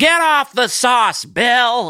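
very high, shrill, loud wife voice, drawn out. Acting out bill's wife scolding him at the party: playing bill's wife. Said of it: "are you doing both Bill and the wife?".

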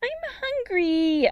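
put-on very high, small, cross little-girl voice. The sister calls to Jordan from the garage, small, angry voice. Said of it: "a small, angry voice".

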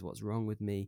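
ordinary talk, nothing marked

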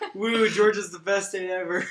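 very loud, high, drawn-out sarcastic whoop. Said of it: "that was such sarcasm".

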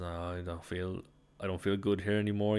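ordinary delivery

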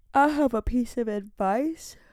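words half-swallowed by a yawn. Starting to share a piece of advice, yawning while speaking. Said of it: "Sorry, I'm yawning".

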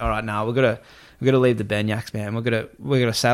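normal talking voice

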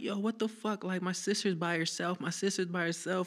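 play-acted, distraught, high-pitched sobbing outburst. Retelling what a man said while crying, imitating someone crying. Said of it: "he was crying because he was like".

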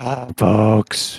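raspy, hoarse just-woke-up voice. A podcast co-host, asked to greet the listeners, answers in a raspy morning voice. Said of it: "raspy morning voice out of [name] there".

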